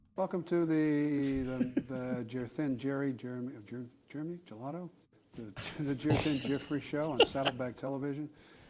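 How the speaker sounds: put-on celebrity voice, stumbling over the words. Doing a celebrity endorsement bit in a Joe Biden voice. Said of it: "that's a Biden".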